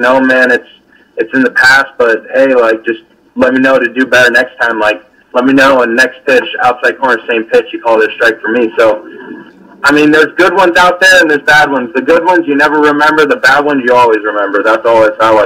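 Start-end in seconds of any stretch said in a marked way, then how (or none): none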